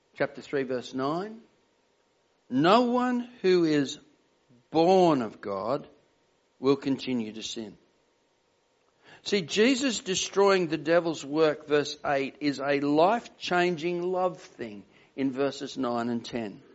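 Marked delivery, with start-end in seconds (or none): 2.5-7.8 "no one" and "born" emphasized. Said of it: "I'll emphasize the word".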